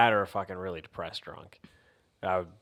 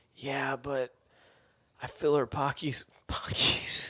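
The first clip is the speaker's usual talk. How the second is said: put-on crying-like speech, higher pitch; 6 semitones higher than usual. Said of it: "speaking like you're crying".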